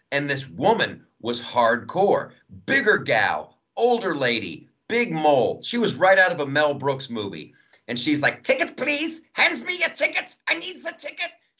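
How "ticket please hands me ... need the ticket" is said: very high, thick, put-on German accent. Retelling a school cafeteria worker asking for tickets, imitating her heavy German accent. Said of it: "She was like straight up German accent".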